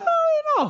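voice jumping up very high, hedging, hesitant. Retelling questioning god: voice going a little higher. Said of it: "your voice kinda goes a little higher".

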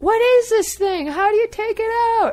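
mock, very high-pitched, carrying yell. Retelling calling down to someone below while trying to remove gear, retelling yelling down. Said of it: "yelling down".

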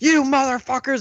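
very high-pitched, furious, enraged outburst. Talking about Alex Jones's outbursts, doing one of them: mock-angry Alex Jones outburst. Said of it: "Alex Jones is just like".

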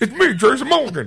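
bad, amateurish announcer impression, loud and high. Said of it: "a bad impersonation of the person".

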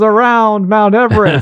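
movie announcer voice. Retelling a movie scene of a boy playing at being an announcer: imitating an announcer voice. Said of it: "And then the voice goes".

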